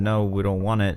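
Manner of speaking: plain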